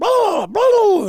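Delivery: very high, loud imitated turkey gobble.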